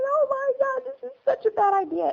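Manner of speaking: play-acted crying, pitched very high and tearful. Retelling a mother's words while driving away: imitating someone crying. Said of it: "she's crying".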